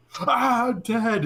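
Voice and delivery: piercing, very high-pitched, loud shriek. Retelling a new player's death in a Lethal Company clip, imitating a scream. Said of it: "he screams like I'm dead".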